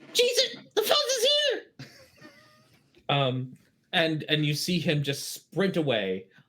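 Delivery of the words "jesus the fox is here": squeaky little goblin voice, very high. Voicing a little goblin who spots a player's character and flees: little goblin voice. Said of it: "the little goblin turns around and looks at you and says".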